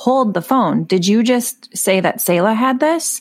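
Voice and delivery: ordinary talk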